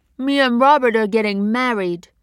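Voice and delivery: cross and heated. Scolded for taking the bus, a woman replies, angry. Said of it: "her lower lip protruding slightly as it did when she got angry".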